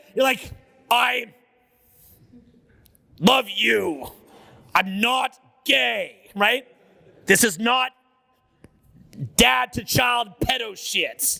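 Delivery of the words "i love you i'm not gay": mock overly masculine delivery. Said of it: "make it sound like a, like a very heterosexual".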